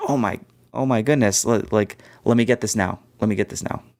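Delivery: put-on panicked, frantic voices. Imitating buyers rushing to grab stock before it sells out: imitating panicked shoppers. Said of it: "or that they're like".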